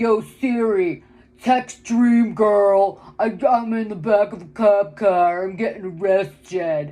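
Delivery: put-on loud, drawn-out, obnoxious teen voice. Retelling how a kid in a cop car talked to Siri: imitating an obnoxious kid. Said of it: "the way he's using this Siri, it's like, he's like".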